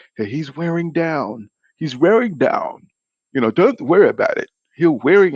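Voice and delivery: put-on botched high English accent. Acting out what Dominic Ingle told Kell Brook about his opponent, in a bad English accent. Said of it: "I can't even do the damn English accent".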